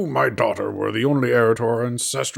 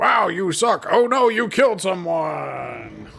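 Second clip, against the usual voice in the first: half-committed, pitched-up, high cartoon character voice; 6 semitones higher than usual. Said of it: "halfway to a strong bad impression".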